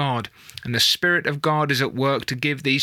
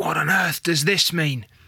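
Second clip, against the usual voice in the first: audible stage whisper; 2 semitones higher than usual. Retelling an attendee's question to her friend: imitating a stage whisper. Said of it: "one of those stage whispers to her friends".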